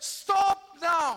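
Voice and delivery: very loud, high-pitched shout. Retelling a villager calling out to the crowd: retelling a shout. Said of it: "he shouts out to the crowd and says".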